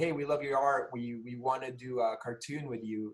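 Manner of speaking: ordinary delivery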